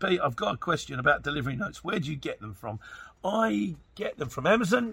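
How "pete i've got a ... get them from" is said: normal talking voice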